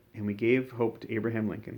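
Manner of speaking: usual speaking voice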